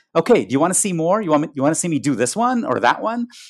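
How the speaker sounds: lightly sarcastic, sardonic send-up, high sing-song. Retelling a dancer's line to the audience: imitating a slightly sarcastic dancer. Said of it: "said in a kind of slightly sarcastic, slightly sardonic way".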